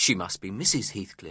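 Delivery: ordinary delivery, nothing marked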